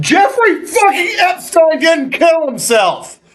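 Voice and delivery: shrill, very high, hard, all-out yelling. Speaking to the folks listening, the speaker yells this line. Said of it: "Sorry to yell".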